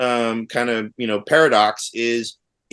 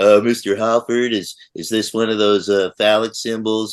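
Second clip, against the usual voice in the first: put-on smart-aleck student voice. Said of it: "he loved to be a smart ass".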